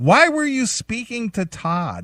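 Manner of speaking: mock very high, loud, swooping accusatory scream. Retelling how a boss confronted them over talking to Todd: imitating a boss screaming. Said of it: "he starts screaming at me".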